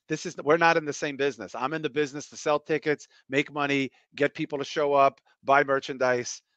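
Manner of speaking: normal talking voice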